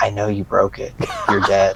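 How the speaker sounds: low, menacing whisper, close to the ear. Retelling how a brother whispered a threat: imitating a menacing whisper. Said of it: "whispers into my ear".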